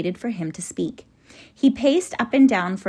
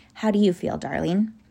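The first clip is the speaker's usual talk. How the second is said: plain reading voice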